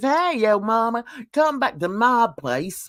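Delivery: chummy, inviting, beckoning call. Warning about a dinner invite, imitating Hussey. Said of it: "if Hussey says".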